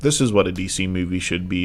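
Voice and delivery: ordinary talk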